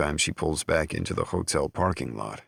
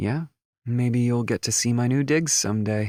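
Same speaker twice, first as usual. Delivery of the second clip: playful, teasing tone in a high voice; 7 semitones higher, 4 dB louder than usual. Reading a romance scene where a woman answers her partner: teasing voice. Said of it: "she says in a teasing voice".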